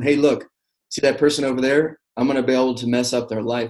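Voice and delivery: play-acted teasing, jokey and playful. Retelling a dream where Satan kept joking around: imitating Satan joking around. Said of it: "kinda, like, joking around".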